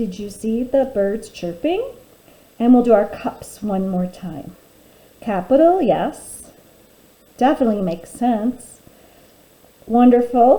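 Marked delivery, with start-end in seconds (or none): 0.0-1.8 pitch rising upward on the word "chirping". Reading a sentence aloud together with the listeners, with rising question intonation. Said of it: "your voice kind of goes up".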